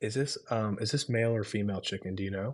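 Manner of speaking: imitated, put-on whisper. Retelling a family friend asking the waitress a question: retelling a whisper. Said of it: "he whispered to the".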